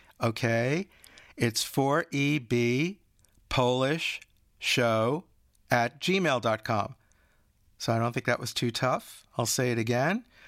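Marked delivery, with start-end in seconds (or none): 1.4-7.0 very slow, deliberate speech. Host giving the show's email so listeners can write it down, very slow. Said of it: "I'm going to say it very slow".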